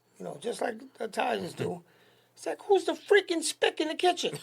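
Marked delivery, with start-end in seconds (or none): 2.7-4.4 very high, loud hollered shout. Recalling a mob guy yelling to his wife about a kid in his kitchen, retelling a man yelling. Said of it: "he yells out to his wife".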